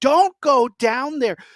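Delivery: put-on high, urgent, shouted yell. Describing a scary movie, retelling screaming at the TV. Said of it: "this movie had me screaming at the T V".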